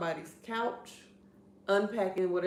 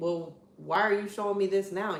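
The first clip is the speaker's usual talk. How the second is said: put-on criticizing tone. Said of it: "she's criticizing".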